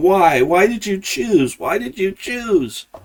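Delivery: mock weeping, high, drawn-out and tearful. Retelling a movie scene, character holding his friend's head: imitating a crying character. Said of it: "crying, going".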